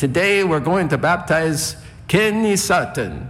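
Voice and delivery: put-on German accent. Recalling baptisms, retelling how Frank announced one: imitating Frank's German accent. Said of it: "Frank would come up with this German accent".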